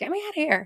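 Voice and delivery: very high, squealing, screaming cat voice. Retelling how a kitten at a kitten farm screamed at the sister: imitating a screaming cat. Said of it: "she kept screaming at her, like".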